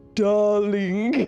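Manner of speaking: darling said in an attempted French accent. Imitating how someone says darling, with an attempted french accent. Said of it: "I can hear you say it with your lovely French accent".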